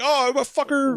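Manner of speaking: bad cartoonish, squeaky child voice, very high. Imagining kids caught fighting over a candy bar, answering in a bad put-on child voice. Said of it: "does your child voice sound like Mickey Mouse?".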